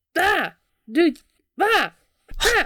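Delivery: very high shrieks, pitch swinging wildly, screaming. Voicing a demon rising from a bathtub, screaming. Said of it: "just kinda screams several times".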